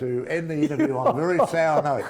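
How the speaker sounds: mock-sad, laughing.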